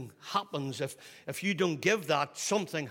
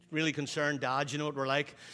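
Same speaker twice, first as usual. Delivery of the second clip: ordinary talk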